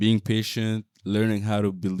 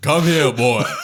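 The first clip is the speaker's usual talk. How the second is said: very loud, pitched-up, raised shouted bark; 5 semitones higher, 9 dB louder than usual. A father shows the voice he is practicing for his son, Kratos voice. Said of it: "practicing my my Kratos voice".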